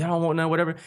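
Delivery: brash, cocky, boxer-style swagger. Retelling goofing backstage in boxing gloves: Muhammad Ali voice. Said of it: "acting like Muhammad Ali".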